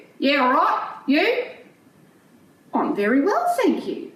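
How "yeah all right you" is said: put-on funny, offhand Australian accent. Telling a story about meeting an alpaca on a farm, Bruce the alpaca's funny accent. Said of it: "you've got a funny accent".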